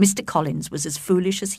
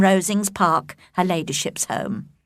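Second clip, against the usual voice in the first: usual speaking voice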